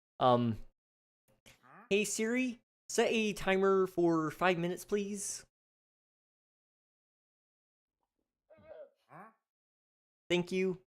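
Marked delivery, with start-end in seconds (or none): 1.9-10.8 very high, silly voice. Asking Siri to set a timer, in a Kermit the Frog voice. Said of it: "I'm gonna give you Kermit".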